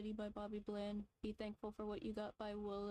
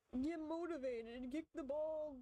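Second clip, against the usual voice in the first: imitated yelling, higher pitch; 6 semitones higher than usual. Retelling how gym class staff yelled at students: imitating someone yelling. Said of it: "they're yelling at you like".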